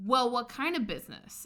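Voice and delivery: mock pushy, demanding, aggressive, pointed tone. Retelling a subway stranger's questioning: imitating an aggressive woman. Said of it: "she gets kind of aggressive".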